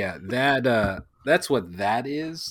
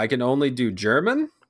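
ordinary talk

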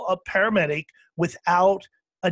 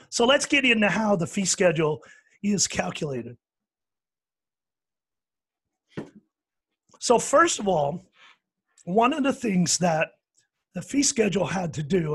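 voice giving out. Explaining to the folks listening, while losing voice. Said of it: "I'm losing my voice here, folks, as you can hear".

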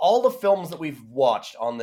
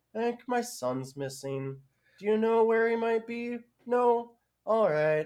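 flat deadpan with zero urgency, pitched up; 6 semitones higher, 6 dB quieter than usual. Quoting a woman in a script, mock-flat with no panic. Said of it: "there's no panic in the script or her voice or anything. She's just like".

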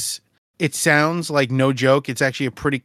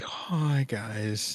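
mock depressed, maudlin tone, lower and quieter; 3 semitones lower, 10 dB quieter than usual. Imitating how the other speaker starts episodes: mock maudlin greeting. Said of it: "Almost, like, depressed".

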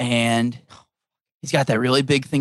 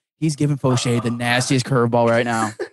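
usual speaking voice

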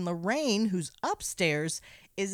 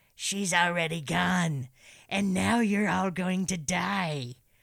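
swashbuckling pirate voice with drawn-out "die". Recapping a movie scene, quoting a woman answering Roger: pirate voice. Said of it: "That sounded more like a pirate".

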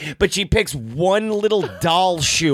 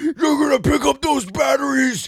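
play-acted, raised, high-pitched screamed yell; 7 semitones higher than usual. Retelling a man who tackled him and yelled at him, retelling a yell. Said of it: "he's yelling at me about those fucking batteries".

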